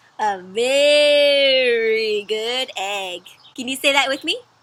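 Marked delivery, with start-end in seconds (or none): 0.2-3.3 very slow, with very stretched way out. Reading a book aloud to friends, with a stretched-out 'very'. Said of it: "the word very is stretched out super long. So that tells me when I read it to read it like this".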